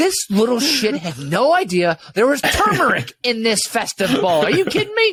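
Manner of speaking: indignant, incredulous, outraged dad voice, rising. Complaining about a neighborhood kid, outraged dad character. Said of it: "I'm out of my dad character again".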